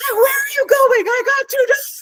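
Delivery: mock, very high shouted outburst. Retelling standing up at the horse races: retelling a yell. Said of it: "stood up and yelled at the window".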